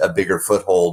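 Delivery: ordinary talk, nothing marked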